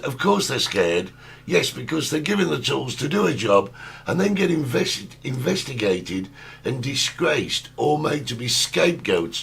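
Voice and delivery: ordinary talk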